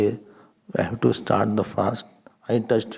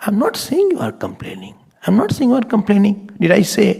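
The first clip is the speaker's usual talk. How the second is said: very high, raised, swooping voice; 10 semitones higher, 6 dB louder than usual. Acting out an argument about an uncooked potato, retelling a raised voice. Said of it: "why are you raising your voice?".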